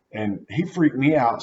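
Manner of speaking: ordinary delivery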